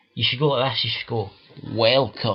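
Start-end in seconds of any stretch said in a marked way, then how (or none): 1.8-2.4 deepened, announcer-style voice. Coaching someone how to sound on a mic, demonstrating a deepened voice. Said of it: "You need to deepen your voice".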